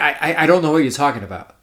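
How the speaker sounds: normal talking voice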